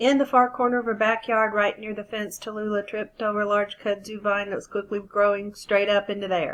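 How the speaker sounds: fast, rushed, words run together, no emphasis. Demonstrating a fast but unfluent reading of a story paragraph: fast reading, no phrasing. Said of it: "That was fast, but it wasn't fluent".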